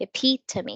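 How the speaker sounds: epitome with stress on second syllable pit. Teaching how to pronounce a less common word: stress on pit in epitome. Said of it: "the stress is on the second syllable. It's on the pit".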